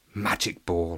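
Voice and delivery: whispering. An angry cricketer channels his temper as he runs in; whispered to himself. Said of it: "he whispered to himself".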